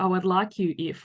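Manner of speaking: ordinary talk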